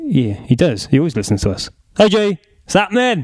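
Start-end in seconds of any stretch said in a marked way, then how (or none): 2.0-3.2 sounding a bit Welsh. Greeting someone who always listens to the show: sounding welsh. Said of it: "you sound like you were doing an impression of a Welsh person".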